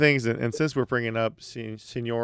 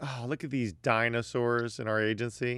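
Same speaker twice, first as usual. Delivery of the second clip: normal talking voice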